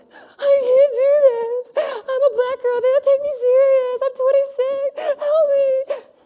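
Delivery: mock very high, loud, drawn-out sobbing. Retelling a phone call to a good friend, imitating her past self crying her eyes out. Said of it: "I am crying my eyes out".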